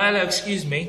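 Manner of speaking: put-on British accent, air hostess style voice. Retelling what a plane hostess said: imitating a British accent. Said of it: "It was a British accent popping in".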